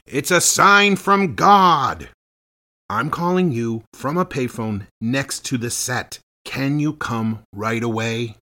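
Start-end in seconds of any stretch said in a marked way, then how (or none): 0.1-2.0 very loud, high, swooping, drawn-out yell. Recounting a past moment on a film set, retelling a yell. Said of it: "I yelled".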